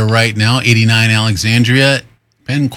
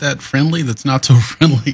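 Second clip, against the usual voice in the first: laughing through the words, self-amused. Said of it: "Sorry, I'm laughing at myself".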